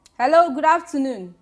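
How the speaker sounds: loud, high-pitched voice.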